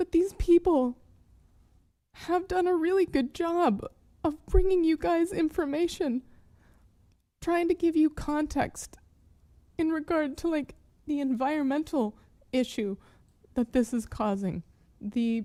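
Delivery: choking up. Speaking to the people here about trauma over Palestine, tearing up. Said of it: "here I am tearing up with a shaky chest".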